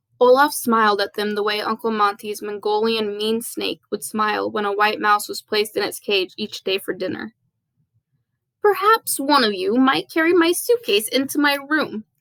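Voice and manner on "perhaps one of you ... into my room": put-on wheezy, slightly high voice. Narrator reading Olaf's line to the children he smiles at, wheezy Olaf voice. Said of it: "he suggested in his wheezy voice".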